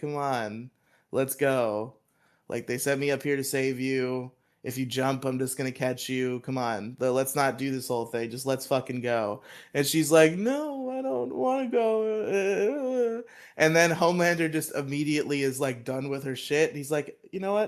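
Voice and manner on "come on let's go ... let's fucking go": put-on disinterested character voice. Retelling a show scene where a hero must save a girl, imitating Homelander, disinterested. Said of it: "he's all like disinterested".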